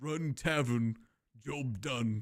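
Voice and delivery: plodding, very slow orc monster voice. The speaker shows the orc voice they love doing in roleplay, orc voice. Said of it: "I love doing orc voice. That just sounds like this".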